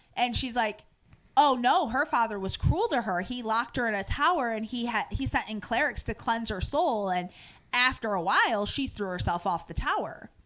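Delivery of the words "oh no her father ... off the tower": ordinary talk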